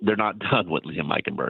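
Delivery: words breaking into laughter while talking. Discussing the Dolphins' lineup with another speaker, laughing while talking. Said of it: "I can't stop laughing every time I say that".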